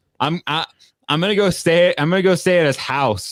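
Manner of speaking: put-on very high little-kid voice, childlike chatter. Describing how a kid would talk about a friend, imitating a kid talking. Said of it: "the way that a kid would talk".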